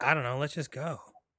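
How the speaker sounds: imitated emotionless, deadpan voice. Retelling a movie scene, imitating a character: imitating an emotionless voice.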